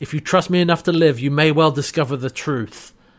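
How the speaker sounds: normal talking voice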